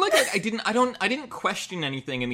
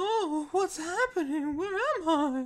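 put-on very high, slow, drawn-out girlish too-young voice. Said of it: "that's my [name] impression".

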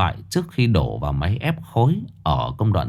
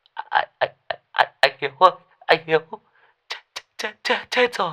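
high, slow, quavering voice with wobbling words; 9 semitones higher than usual. Tuất calls Hiếu on the phone, in a trembling voice. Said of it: "giọng thằng Tuất run run".

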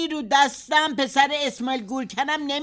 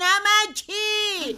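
high, very slow, drawn-out calling yell.

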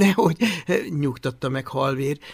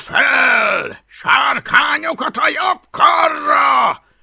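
rasping, rough, high pitch, very slow; 6 semitones higher than usual. Addressing the row of lined-up boys before inspecting them, roaring. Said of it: "Üvöltötte".

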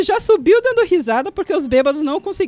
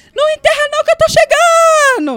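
very high, loud shout as if from far off; 11 semitones higher, 6 dB louder than usual. Telling a burial story, speaker acts out a drunk yelling from a hill: retelling a distant shout. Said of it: "A gente escuta um grito assim".

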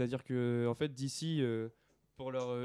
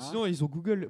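raised, higher-pitched shouting. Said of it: "pardon, je crie".

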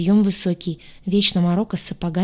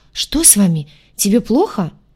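flustered, suddenly alarmed tone; 4 dB louder than usual. The captain, hearing the narrator sob: alarmed. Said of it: "всполошился".

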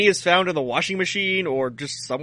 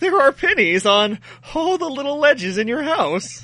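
put-on high, small kid's childlike voice; 8 semitones higher than usual. Retelling what he said after searching the rooms, in a childlike voice. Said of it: "with like the most childlike voice".

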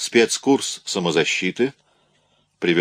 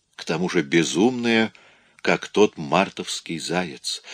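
plain

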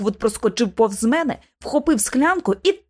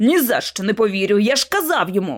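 plain reading voice

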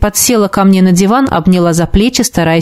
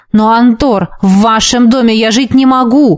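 ordinary delivery, nothing marked

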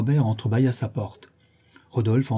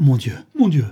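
loud, terrified outcry; 3 semitones higher, 5 dB louder than usual. A narrator reads Charles Robert learning the husband followed his wife, crying out in terror. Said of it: "s'écria Charles Robert en joignant les mains avec épouvante".

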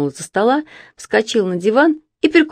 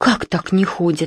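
gasping, slower. Told that Lenya has not been going to school, Evdokia Petrovna gasps. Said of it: "ахнула Евдокия Петровна".

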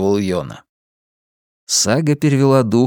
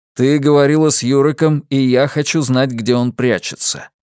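usual speaking voice

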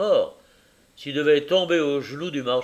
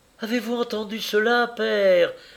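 joyful, rapturous, carried-away cry, pitched up; 8 semitones higher than usual. Reading the blind girl calling to her father after Tackleton's request, crying out with rapture. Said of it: "S'écria la jeune aveugle avec transport".

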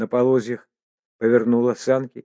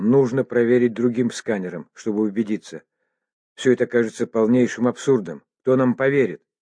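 ordinary delivery

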